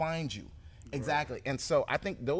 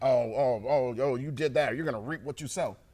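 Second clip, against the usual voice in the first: play-acted, loud, condemning scolding tone; 5 dB louder than usual. Quoting how people use a saying, in a mock-condemning tone. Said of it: "people say that in a way that's condemning".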